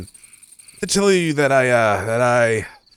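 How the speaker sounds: voice fading out. Before they leave, he starts to tell her something, voice trailing off. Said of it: "your voice is trailing off".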